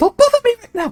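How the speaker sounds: very fast, high-pitched. Repeating what she said, say it very fast and high-pitched. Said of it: "she did say it very fast and high pitched".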